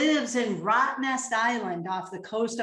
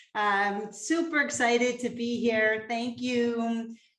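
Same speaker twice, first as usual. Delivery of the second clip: normal talking voice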